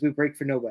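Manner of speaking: plain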